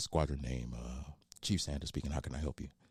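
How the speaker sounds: deep, sultry telephone voice. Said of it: "the sultry voice that I used to use in the Navy".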